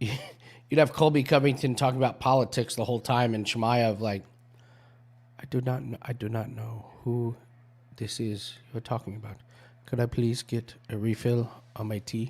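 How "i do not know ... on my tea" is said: really soft, hushed, soothing, lulling voice. Imitating Chimaev replying to someone talking politics: soft Chimaev voice. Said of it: "with that really soft voice".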